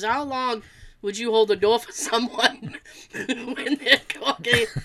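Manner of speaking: speaking through laughter. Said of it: "She goes".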